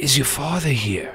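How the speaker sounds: put-on weak, feeble voice. Retelling what a visitor at the door asked: imitating Frankie's weak voice. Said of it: "he says in a weak voice".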